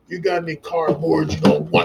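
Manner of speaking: insistent, pushy, forceful tone, pitched high. Retelling how he asked a woman for cardboard, in a deep, forceful voice. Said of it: "I came out with a, a deep voice and I demanded stuff with force".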